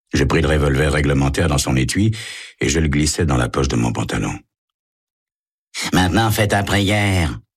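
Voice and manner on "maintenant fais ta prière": rasping, grating, pitched-up menace. Eddie, gripping his revolver, speaks to his captive, grating. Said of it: "grinça Eddie".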